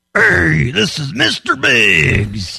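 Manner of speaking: slow, drawn-out, gruff voice with swooping pitch. Prank call to an elderly woman, putting on Mister Biggs voice. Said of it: "let me just put on Mister Biggs".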